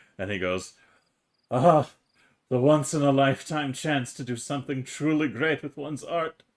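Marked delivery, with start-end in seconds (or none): 1.5-6.3 crying through the words, tearful, weeping voice. A character starts crying as he speaks to the group, crying while speaking. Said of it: "he's like crying now".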